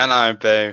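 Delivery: bland, flat delivery. Doing a fan greeting as Seth Rollins: bland Seth Rollins voice. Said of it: "I'm gonna do it in the bland style of Seth Rollins".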